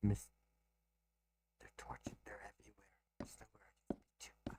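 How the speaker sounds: hushed whisper. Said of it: "I'm gonna whisper this to you".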